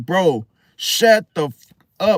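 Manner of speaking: furious, slow angry snap, words bitten off. Retelling snapping at a man who kept yapping, retelling snapping angrily. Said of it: "like literally like that".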